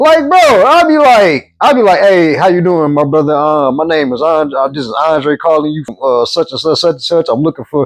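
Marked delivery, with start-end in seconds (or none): 2.0-7.9 courteous, businesslike, polite professional phone voice. Retelling how calls to customers go: imitating own professional phone voice. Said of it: "try to sound a little professional".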